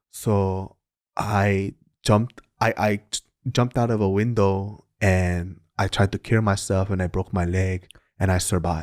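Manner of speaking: put-on thick Korean accent. Retelling a guy's testimony in a group: imitating a thick Korean accent. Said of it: "he has a thick Korean accent".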